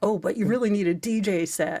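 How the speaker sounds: sarcastic tone laid on thick, heavy, full-on. Imagining what she'll say to mister mo, putting on full sarcasm. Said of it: "I'm gonna go full on sarcasm and be like".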